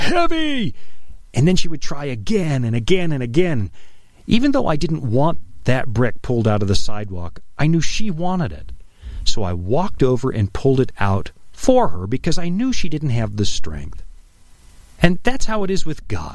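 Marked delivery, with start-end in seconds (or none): 0.0-0.7 put-on very high little toddler yell. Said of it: "she would grunt and yell".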